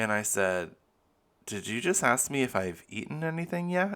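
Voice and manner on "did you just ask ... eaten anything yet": catty, condescending, snotty, high-pitched voice.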